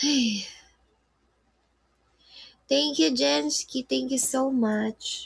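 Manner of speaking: trembling, shaky voice. Thanking Jensky on air while feeling sick, in a trembling voice. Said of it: "nanginginig boses ko".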